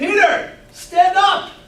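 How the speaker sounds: loud, high-pitched yelling.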